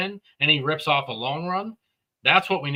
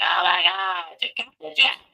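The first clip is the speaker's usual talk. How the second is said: mock announcer half-scream, mild yell, pitch climbing throughout; 3 semitones higher than usual. Retelling an announcer's call after a strip sack: imitating an announcer screaming. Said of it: "he sounded like a girl, like, screaming".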